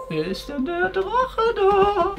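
high-pitched, slow, drawn-out wondering.

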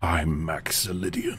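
deep, super intense, aggressive voice. Introducing a cool new name: super intense, aggressive, deep voice. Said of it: "Gotta do it in a super intense, aggressive, and deep voice".

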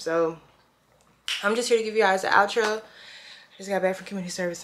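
out of breath, winded. Just back from community service, a vlogger records a video outro out of breath. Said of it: "I'm out of breath".

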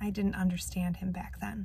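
very quiet voice, words let out sighing. Narrator voicing Grandpa as he sighs and answers: sighing, very quiet voice. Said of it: "He sighs and says in a quiet, quiet voice".

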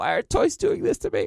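high, choking wailing. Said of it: "I got choked up legit just reliving that scene".

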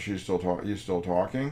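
normal talking voice

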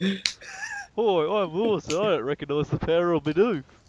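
booming, loud, slow, drawn-out, swooping sing-song. Mocking the other speaker by doing his voice: imitating Lewis. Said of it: "Is that Lewis?".

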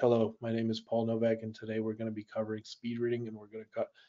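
dull, flat, one-note droning lecturer voice. Webinar host shows how a monotone teacher's introduction sounds: monotone. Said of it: "spoke in a monotone voice like this".

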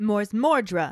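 loud, yelled out loud.

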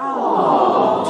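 sincere, genuinely charmed, won-over aww. Showing the sound for seeing a real puppy: sincere aww. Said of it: "an actual puppy or a kitten".

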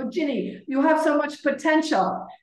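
put-on thick Polish accent. Retelling a rowing coach's goodbye words to her, in a thick Polish accent. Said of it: "has a very thick accent".

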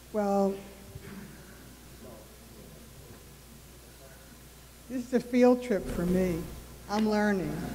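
very quiet, soft-spoken, near-whispered voice. Answering a request to share useful lessons, very soft-spoken. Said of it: "Speak a little louder. You're so soft-spoken".

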